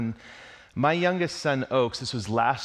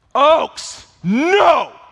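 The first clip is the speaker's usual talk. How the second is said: piercing, very loud, high-pitched full-volume scream; 13 dB louder than usual. Retelling stopping a running child before a speeding car: imitating own yell. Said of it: "I yell".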